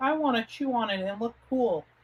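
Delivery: put-on silly little child's voice, pitched high. Recalling a comic-strip videotape, voicing its little kid, funny little kid voice. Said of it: "so it was these weird voices".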